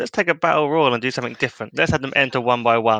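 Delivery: ordinary talk, nothing marked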